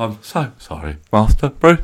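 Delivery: slow, low, drawn-out, near-tearful apologetic voice. Doing an impression of Michael Caine about to cry: Michael Caine impression. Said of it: "Go on then".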